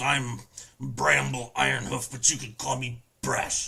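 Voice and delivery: kinda grumpy, grumbling character voice. Voicing a faun with a cudgel introducing himself: grumpy Brash voice. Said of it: "he seems kinda grumpy".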